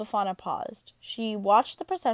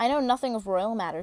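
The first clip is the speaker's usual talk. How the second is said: ordinary delivery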